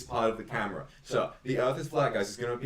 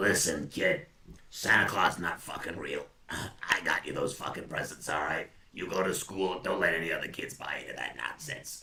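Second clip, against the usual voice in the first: low, miserable, ghoulish chain-smoker voice; 5 semitones lower than usual. Playing a miserable adult talking to a kid: miserable chain cigar smoker voice. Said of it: "I imagine I must be a, a chain cigar smoker".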